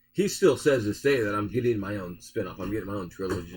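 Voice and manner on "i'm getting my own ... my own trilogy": ordinary talk, nothing marked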